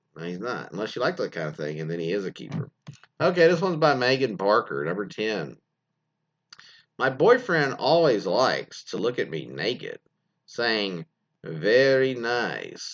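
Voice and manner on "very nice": heavily rolled R in very, drawn-out nice. Reading a listener's note, retelling her boyfriend's line in Borat impression. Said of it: "he actually has like five R's in there".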